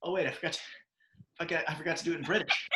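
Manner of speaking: put-on breathlessness. Playing out a movie scene, acting out being out of breath. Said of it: "I'm like out of breath".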